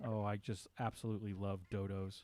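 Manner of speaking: soft, sarcastic, fake gushing delivery.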